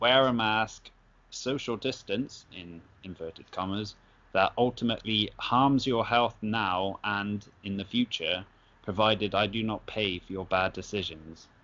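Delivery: ordinary talk, nothing marked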